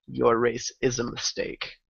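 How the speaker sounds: soft, hushed whisper under the breath. Voicing a character after shooting an enemy: whispered under breath. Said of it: "I whisper under my breath".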